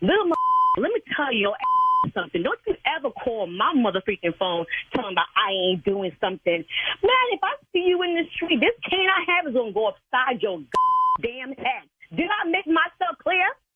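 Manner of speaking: heated, furious rant, pitch climbing high. Scolding a young man on the phone for calling, angry rant. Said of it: "I cannot believe you talking to me like this".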